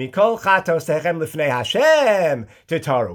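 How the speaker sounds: heavy stress placed on "lifnei Hashem". Showing how to read the Yom Kippur verse, stress on lifnei Hashem. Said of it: "The emphasis on, of course, is lifnei Hashem. ... You read it like this".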